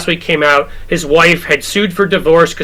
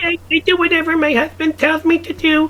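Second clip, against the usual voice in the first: put-on very high, childlike baby-talk voice; 11 semitones higher, 4 dB quieter than usual. Imitating Mike Johnson's wife, high, childlike baby voice. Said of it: "the baby voice like Mike Johnson's wife".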